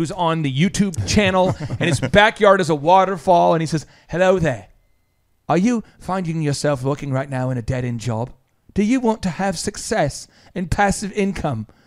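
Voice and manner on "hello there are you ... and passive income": put-on British accent, put on. Imitating a typical guy from YouTube success videos, in a British accent. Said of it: "a guy with a British accent".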